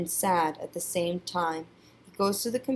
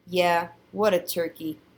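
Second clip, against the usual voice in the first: ordinary delivery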